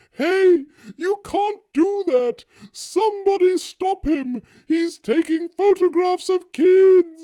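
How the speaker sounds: mock old lady shouting and screaming. Retelling a bystander objecting to the speaker's photo, imitating an old lady screaming. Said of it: "she was shouting and screaming".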